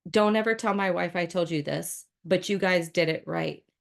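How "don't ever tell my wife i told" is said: usual speaking voice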